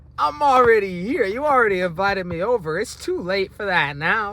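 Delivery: cocky mocking tone, high-pitched and loud.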